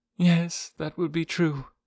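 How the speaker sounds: murmured dully, flat and quiet. Hearing about a man's claimed past, a character agrees, murmured dully. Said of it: "murmured Jane Porter dully".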